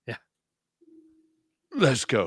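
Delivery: swooping, animated delivery, pitch swinging all over. Doing an impression of a movie scene: Nicolas Cage impression. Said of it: "this is my only Nicolas Cage impression".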